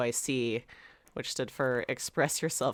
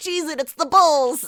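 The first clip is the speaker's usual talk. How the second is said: very loud, high, shrill yelling in fake New York accent; 14 semitones higher, 12 dB louder than usual. Recalling a time they ran around yelling, in a really bad New York accent. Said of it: "in like a really bad like New York accent".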